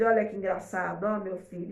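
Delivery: plain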